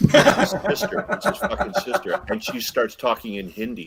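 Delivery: ordinary talk, nothing marked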